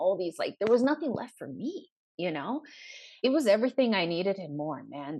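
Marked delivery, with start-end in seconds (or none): 3.2-5.2 choked up, emotion welling, voice catching. Speaker says they are getting a little choked up: choked up. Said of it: "I am getting choked up a little bit".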